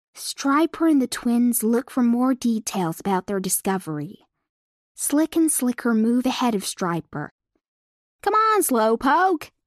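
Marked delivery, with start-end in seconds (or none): 8.2-9.5 cocky, bragging, high, boastful jeering tone. Reading a story aloud, twins teasing a slower companion: boasting. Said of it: "they boast".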